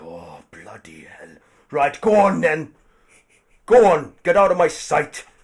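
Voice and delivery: very loud, fed-up, exasperated outburst with swooping pitch. Voicing a human man who lets another go first: exasperated human man voice. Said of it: "the human man is like".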